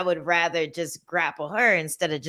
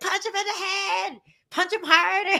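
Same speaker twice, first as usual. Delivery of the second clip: very high, play-acted nasal yelling. Retelling cheering a fighter from the sideline, retelling nasal screaming. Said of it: "using my using my naval nasal voice".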